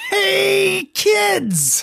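very high pitch with swooping intonation. Greeting the listeners at the podcast's opening: Binky the Clown voice. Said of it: "I was Binky the Clown from Garfield".

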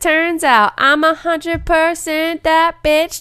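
high, loud, slow country twang.

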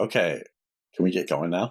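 ordinary talk, nothing marked

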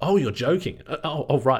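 caught-off-guard, startled, shocked disbelief. Retelling a New Yorker learning they were Australians joking, mimicking a shocked reaction. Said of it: "looked at us with this look of shock and went".

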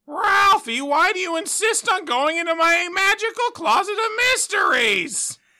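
very high, loud cartoonish voice. Taking turns doing cartoon impressions: Chief Wiggum voice. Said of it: "we'll do Chief Wiggum".

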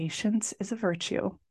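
soft, gentle.

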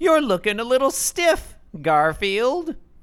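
very high, shrill storybook witch voice. Voicing Grandma's comic-strip line: Wicked Witch of the West voice. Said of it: "Wicked Witch of the West kind of a voice".

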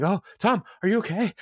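play-acted, high, freaked-out panicked fussing. Retelling a man freaking out over someone writhing on the floor, mock-panicked. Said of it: "Andy starts freaking out".

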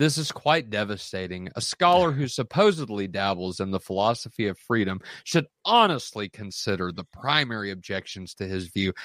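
plain

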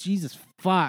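play-acted, thoroughly exasperated, fed-up tone. Retelling a moment on the show, imitating Andy, exasperated. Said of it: "so, like, exasperated and just like".

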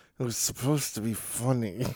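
quiet, forced out between clenched teeth. Imagining how a man would answer, saying it through gritted teeth. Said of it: "through gritted teeth saying".

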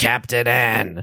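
rasping, gravelly smoker's voice. Mocking a cartoon's voice casting, quote the character in a Mega Man smoker's voice. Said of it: "They gave Mega Man a smoker's voice".

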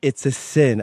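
put-on South Philly old woman voice. Imitating old women from South Philly: South Philly old woman voice. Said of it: "a lot of women from, like, South Philly say".

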